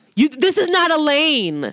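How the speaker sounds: mock high-pitched yelling with drawn-out "lane". Recounting a man who yelled at the speaker while parking, imitating someone yelling. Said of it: "He literally like yelled".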